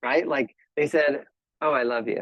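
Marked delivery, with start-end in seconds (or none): 1.6-2.2 put-on flat, unfeeling tone. Acting out someone saying a line they don't feel: imitating a flat delivery. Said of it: "you said that kind of flat".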